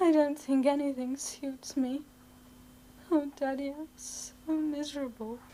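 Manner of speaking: sobbing, tearful and miserable crying. A daughter speaks to her father in a drama, tearful, miserable. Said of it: "you're not crying about that".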